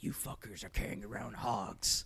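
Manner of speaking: gravelly, low whispering. Show the others how the actor talks, in a low, gravelly Clint Eastwood voice. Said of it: "so low and gravelly".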